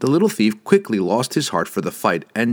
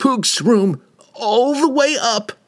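very high, slow, frightened little terrified squeak; 13 semitones higher than usual. The thief, facing Wulfgar's bellowing, tells where to find Regis: terrified little man's squeak. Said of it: "revealing a tiny man, barely more than a halfling, crouched and poised to spring. Exposed, the little thief quickly lost his heart for the fight and just shrugged apologetically as [name] slapped his puny dagger away. ... the terrified thief shrieked. ... the little man squeaked".

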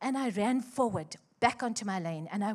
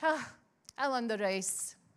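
mock very arrogant, self-satisfied, boastful tone; 2 semitones higher, 3 dB quieter than usual. Recalling what they once said to him, retelling in an arrogant tone. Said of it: "in a very, very, by the way, arrogant tone".

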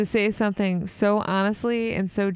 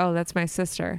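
put-on deadpan delivery, much lower pitch; 3 semitones lower than usual. Recounting a man's reply after hearing his sister called a jerk, retelling a deadpan remark. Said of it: "Completely deadpan".

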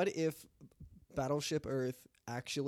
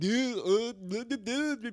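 dopey, dim podcaster voice, pitched up, babbling; 8 semitones higher, 5 dB louder than usual. Asking whether to talk like a dumb podcast host: mocking dumb-sounding voice. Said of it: "you want me to talk like".

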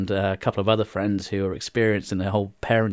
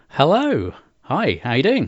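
slight put-on Australian accent, animated and raised; 6 semitones higher, 6 dB louder than usual. Podcast guest greeting the host at the start of the episode: slight aussie accent. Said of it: "You're trying to do a slight Aussie accent there".

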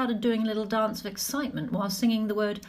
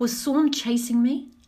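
ordinary delivery

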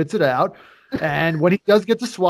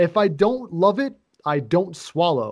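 ordinary delivery

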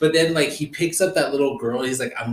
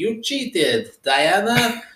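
fake Russian accent, higher; 7 semitones higher than usual. Quoting the aunt scolding young Diana: put-on Russian accent. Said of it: "there's no Russian people at Themyscira".

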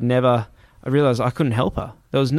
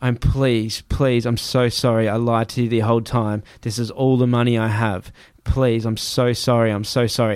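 acted-out shaky, pleading, slower voice. Storyteller reenacting their past self begging a man, retelling shaky begging. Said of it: "and I'm shaking, and I'm just there going".

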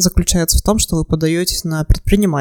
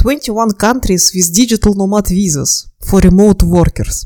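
English spoken with a Russian accent. Reading a search result aloud in English, Russian-accented English. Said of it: "Извините мой русский акцент, мне просто очень нравится".

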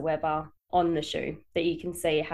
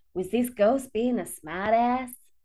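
bad, slow, put-on American accent; 5 semitones higher than usual. Quoting what he said during a ghost episode: terrible American accent. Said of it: "That was a terrible American accent".

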